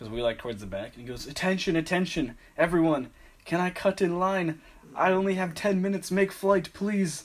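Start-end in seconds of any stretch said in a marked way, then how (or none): 1.3-7.2 put-on loud yelling, heavy foreign accent, broken English. Retelling a man yelling from the back of the line, retelling a yell, heavy accent. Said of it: "he's like yelling, heavy accent".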